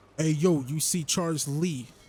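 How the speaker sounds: put-on New York accent attempt. A video game commentator calls out to a game character, attempting a New York accent. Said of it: "I'm trying to have a New York accent".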